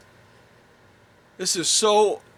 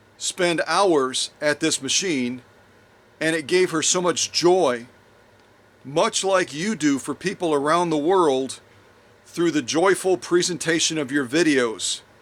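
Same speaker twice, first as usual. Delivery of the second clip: plain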